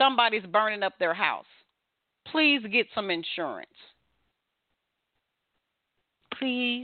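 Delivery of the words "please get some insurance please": kind, pleasant, sweet, nice voice. Speaker briefly switches register before moving on: nice voice. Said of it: "That's my nice voice".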